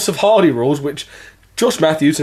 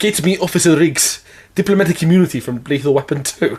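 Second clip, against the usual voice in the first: poorly faked South African accent. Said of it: "he kind of dips in from English to South African".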